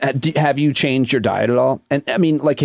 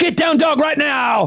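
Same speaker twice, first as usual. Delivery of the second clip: very high-pitched, drawn-out, fake shouted yell; 13 semitones higher than usual. Playing a yoga instructor who yells at the class: mock yelling yoga instructor. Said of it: "Yell at you".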